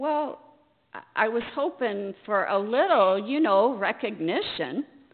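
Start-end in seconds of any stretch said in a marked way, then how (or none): none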